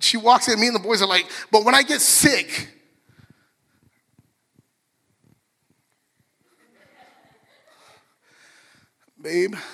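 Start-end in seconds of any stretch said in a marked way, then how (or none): 1.5-9.5 feeble, weak, sickly-sounding voice. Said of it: "my voice changes".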